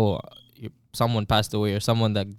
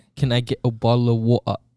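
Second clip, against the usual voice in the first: put-on British accent. Asked to give it a try on a podcast, the speaker orders water in a put-on British accent. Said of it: "Like the UK style".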